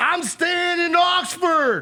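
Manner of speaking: bad put-on voice, very high and slow. Imitating Lane Kiffin holding up the Egg Bowl trophy: imitating Lane Kiffin. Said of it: "My Ole Miss voice ain't it".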